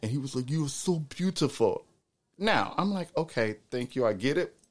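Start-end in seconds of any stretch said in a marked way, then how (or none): 0.5-1.8 put-on thick, laid-on Swedish accent. Quoting a man from Sweden who kept saying this, thick Swedish accent. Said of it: "He had a very thick accent".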